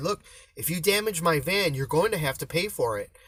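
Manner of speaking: mock serious, stern, firm no-nonsense tone. Retelling warning workers who couldn't understand not to damage the van: retelling a stern warning. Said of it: "I got stern with them".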